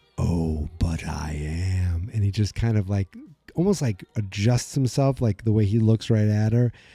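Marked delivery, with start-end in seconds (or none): 0.2-2.1 creepy, low, very slow, drawn-out voice. Retelling a scene where the villain answers the girl: creepy Vecna voice. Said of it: "it's so creepy the way he goes".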